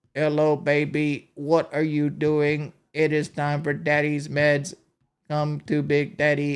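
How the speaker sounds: slow, deliberate delivery, each word laid out. Joking about Stephen Hawking, acting out his flirting: Stephen Hawking impression. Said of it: "he was like".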